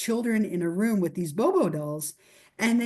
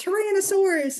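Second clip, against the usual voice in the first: put-on very high, childish twelve-year-old voice, shouted; 11 semitones higher than usual. Retelling playing Power Rangers as a child: imitating own twelve-year-old voice. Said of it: "in my little twelve-year-old voice".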